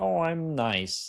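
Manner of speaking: high-pitched cartoon frog puppet voice. Showing off an impression while talking about daily affirmations, Kermit the Frog voice. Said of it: "Kermit the Frog".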